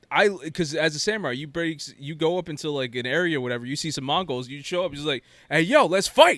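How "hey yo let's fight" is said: offhand, loud, pitched-up hollering. Retelling how the samurai announces himself to enemies: imitating the samurai calling out a fight. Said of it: "word for word, that's exactly what he says".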